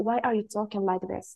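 usual speaking voice

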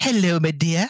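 put-on British, English-sounding accent. Trading accents with others, saying a greeting in a British accent.

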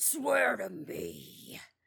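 rough, creaky, swooping rasp. Quoting a Batman scene while watching a movie, in Batman voice. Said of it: "I wanna intercut that Batman scene".

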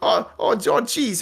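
very high, slow cartoon voice, every "oh" stretched. Attempting a Morty voice after the other's try: Morty voice. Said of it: "I can't do Morty either".

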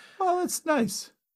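very high voice, shooting sharply upward. Reacting to another speaker's remark, voice going up. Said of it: "Your voice went up".

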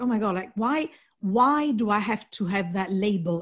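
ordinary talk

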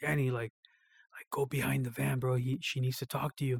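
hushed, barely audible half-whisper under the breath. Retelling how a brother passed on a message: imitating someone half-whispering. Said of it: "whispers them".

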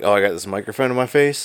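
normal talking voice

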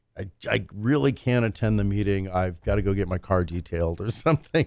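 ordinary delivery

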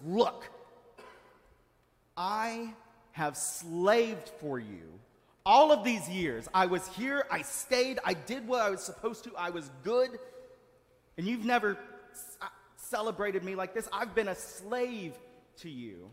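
loud, furious, angry outburst. Retelling the older brother's complaint to his father: acting out furious anger. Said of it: "He's furious".

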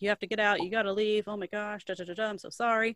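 usual speaking voice

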